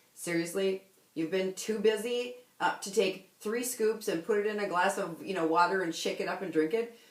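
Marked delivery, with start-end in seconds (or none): none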